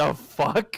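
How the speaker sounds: soft, hushed whisper under the breath. Voicing a bandit who whispers as someone reaches the door: whispering.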